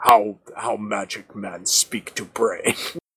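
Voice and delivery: grumbling, grumpy muttering in a put-on manner. Voicing a character complaining about telepathy: grumbling in character.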